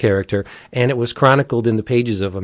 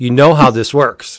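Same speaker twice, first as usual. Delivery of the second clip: put-on irritated call-in host voice, louder; 4 dB louder than usual. Imitating Art Bell getting irritated with callers: imitating irritated Art Bell. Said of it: "Art Bell would be like".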